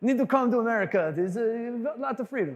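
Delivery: put-on accent from Israel. Telling a story about a man who came to America, quoting him: Israeli accent. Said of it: "this is my Israeli accent".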